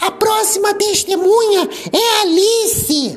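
shrill, very high, loud call at top of voice. Narrating a rabbit reading out in court, at the top of a shrill voice. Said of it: "leu com o tom mais alto que alcançava sua voz estidente".

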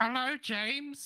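put-on very high, small, squeaky elderly mother voice. Answering James's weekly Wednesday call as Mom, in an old mother voice. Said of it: "you sound like a very small version of my friend".

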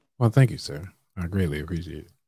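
put-on, affected deep voice. Thanking another speaker for praise, joking: put-on deep voice. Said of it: "Gotta put the deep voice on".

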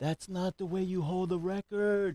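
put-on very high screaming outburst in a small child's voice. Retelling a seven-year-old's outburst in a theater: imitating Ethan screaming. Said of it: "He screams out".

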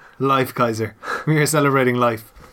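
ordinary delivery

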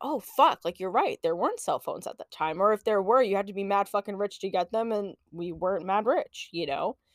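ordinary talk, nothing marked

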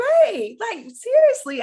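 high, loud, exasperated voice.

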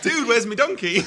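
slight Geordie accent, very high-pitched, shrill, shouted. Saying aloud the line he typed, in a slightly geordie accent. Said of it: "You went a bit Geordie".

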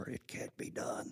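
almost-whispered, soft and slow. A preacher retelling what a woman said during his sermon, almost a whisper. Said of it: "in a whisper, almost a whisper".

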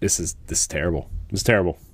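ordinary talk

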